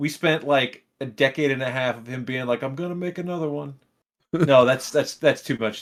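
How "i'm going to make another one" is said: put-on gentle elderly man's voice. Act out the Avatar director announcing his plan after many years, in an old-man James Cameron voice. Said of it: "because he's old".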